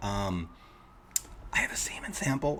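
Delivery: whispered under the breath, halting "um". Retelling asking a lab clerk for help: retelling a whisper. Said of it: "I don't know why I whispered it".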